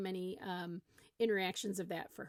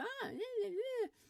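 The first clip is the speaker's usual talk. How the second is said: put-on very high, whiny toddler noises. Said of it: "that kind of whiny voice".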